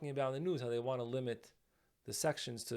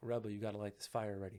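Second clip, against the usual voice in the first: hushed half-whisper, under the breath; 3 semitones lower, 4 dB quieter than usual. Retelling what you half-whispered to the rebbe in a dangerous crowd, retelling a half-whisper. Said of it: "I was like whispering under under under my breath".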